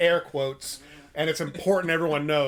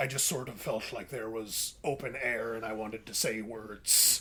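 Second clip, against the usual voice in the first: unhurried, low, slow cartoon crab captain voice; 6 semitones lower, 10 dB quieter than usual. Retelling what Liam Neeson told the director: Liam Neeson impression sounding like Mister Krabs. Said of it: "why is Liam Neeson Mister Krabs?".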